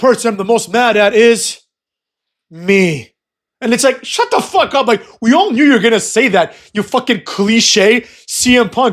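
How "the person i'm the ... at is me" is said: theatrical, weighty delivery with a dramatic pause. Retelling a wrestler's promo line, imitating CM Punk's dramatic pause. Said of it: "takes a dramatic pause and he's like".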